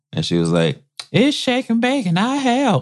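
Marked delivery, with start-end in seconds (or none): 1.2-2.9 put-on little girl's country accent, very high and slow. Recalling a TV commercial, quoting the little girl in it: little girl's country accent. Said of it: "She had a country accent".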